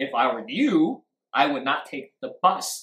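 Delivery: clear stress on the words you and bus. Teaching word stress instead of a monotonic voice: stress on you and bus. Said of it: "You clearly hear you and bus".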